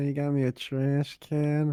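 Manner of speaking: put-on words drawn out in an old grandmother voice.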